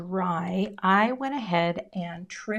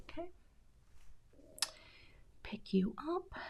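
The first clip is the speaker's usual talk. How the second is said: soft, focused whisper, barely audible; 8 semitones higher, 15 dB quieter than usual. Concentrating on a craft project, whispering. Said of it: "Sorry for the whispering".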